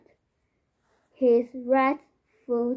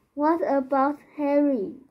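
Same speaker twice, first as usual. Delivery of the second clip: plain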